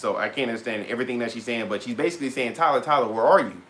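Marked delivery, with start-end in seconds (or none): none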